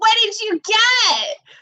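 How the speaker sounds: startling, booming, full-throated, high-pitched scream. Retelling coming home and their mom calling through the doorbell, imitating mom's booming scream. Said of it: "I just hear this booming voice because my mom screams".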